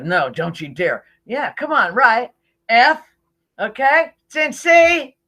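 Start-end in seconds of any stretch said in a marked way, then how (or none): 0.0-1.0 mock muttering under the breath. Retelling how someone answered his suggestion, imitating muttering under his breath. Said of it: "like under his breath".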